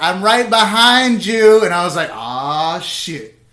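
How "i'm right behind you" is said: very loud, drawn-out, pitched-up yell. Comedian on stage recounts a man he joked about calling out, retelling a yell. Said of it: "he yells out".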